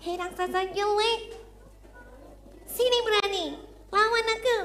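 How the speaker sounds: tiny, high-pitched, cutesy little voice. Storyteller voicing a character who challenges an ugly giant, in a small voice. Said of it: "Agak kecil ya".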